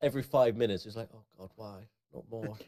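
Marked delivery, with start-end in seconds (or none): 1.1-2.5 mock anguished, suffering voice. Imitating a friend suffering through a bad audiobook, mock suffering. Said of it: "listen to Crow suffer".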